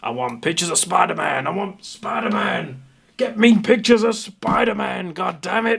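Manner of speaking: put-on demanding, impatient voice, pitched high. Joking about rushing in through the wall: J K Simmons impression. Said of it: "my best J K Simmons impression".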